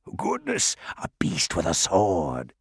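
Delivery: low, hissing, swooping creature voice. Reading the story, the creature answers a girl holding out her rapier: hissing creature voice. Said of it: "it hissed".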